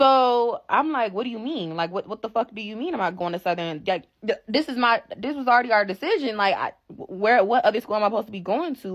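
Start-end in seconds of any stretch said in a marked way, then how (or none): 1.1-9.0 mock crying, disbelieving, argumentative, tearful protesting tone. Retelling arguing back at dad: reenacting a tearful argument. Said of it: "I'm arguing him down. Like, please, I'm crying".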